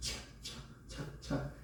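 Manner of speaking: soft, unvoiced, whispered clacking sounds.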